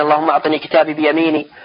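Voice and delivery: ordinary talk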